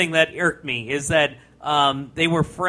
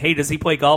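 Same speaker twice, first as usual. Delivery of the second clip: plain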